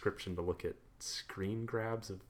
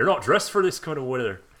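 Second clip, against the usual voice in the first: put-on very loud, high Scottish accent; 5 semitones higher, 12 dB louder than usual. Quoting a guy on the bus talking to her, in a put-on scottish accent. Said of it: "Pardon my Scottish accent".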